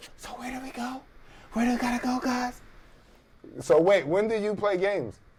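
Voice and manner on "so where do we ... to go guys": high-pitched, hushed whisper. Retelling gaming late at night while his partner sleeps: imitating his own whisper. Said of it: "now I'm just whispering".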